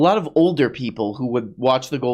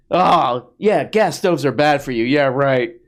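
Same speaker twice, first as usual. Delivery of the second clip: dripping, heavy, mocking sarcasm; 3 semitones higher, 4 dB louder than usual. Mimicking how the video opens: imitating a sarcastic tone. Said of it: "we're starting off very sarcastic".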